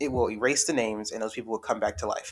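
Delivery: plain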